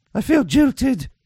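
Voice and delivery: high, mock, posh royal voice. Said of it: "heard the Queen saying".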